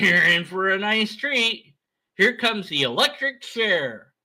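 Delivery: mocking, sarcastic taunting tone. Acting out a sarcastic taunt toward a condemned person: mock taunting. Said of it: "we don't taunt like that".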